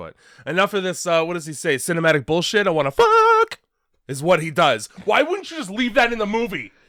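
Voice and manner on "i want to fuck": put-on voice, cracking, higher and louder. Imitating a movie line while discussing the film: voice cracking impression. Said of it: "I'm gonna try and do an impression, and my voice is gonna crack".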